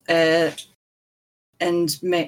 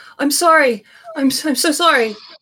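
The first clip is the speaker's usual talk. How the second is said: sudden high, loud, desperate apologetic shout. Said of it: "he will just shout".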